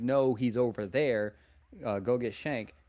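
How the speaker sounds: ordinary talk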